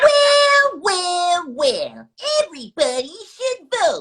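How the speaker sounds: put-on tiny, very high, sing-song toddler voice. A guest, asked by the interviewer to do his toddler voice, obliges: toddler voice. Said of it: "everybody wants you to do the toddler voice".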